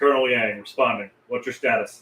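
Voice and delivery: gruff, very low, deep, rumbling military voice. Narrator voicing Colonel Yang answering Second Lieutenant Barlow's radio call, gruff voice. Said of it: "responds with a gruff voice".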